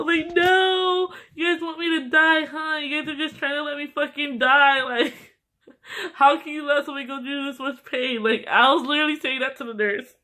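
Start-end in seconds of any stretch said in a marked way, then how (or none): 0.3-8.2 sobbing, out-of-it, pain-crazed crying and screaming. Retelling what was said to the nurse in pain: retelling own crying and screaming. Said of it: "crying and screaming".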